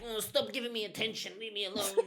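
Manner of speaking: very high, put-on gimp voice. Imitating dad pushing away the attention: imitating dad in a gimp voice. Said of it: "it's like that gimp".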